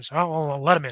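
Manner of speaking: put-on gruff, rough, almost gravelly voice. A game master voices the man inside answering the one at the door, gruff, almost gravelly voice. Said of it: "this kind of gruff, almost gravelly voice".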